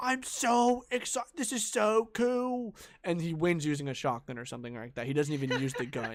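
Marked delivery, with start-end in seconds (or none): 0.0-2.7 high, slow, overdone fake surprised online-video-host voice. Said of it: "he acts, like, surprised".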